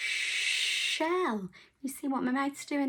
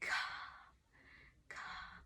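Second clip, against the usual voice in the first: hushed, soft whisper. Showing a learner how to say the word after asking: whispering. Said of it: "Can you whisper it?".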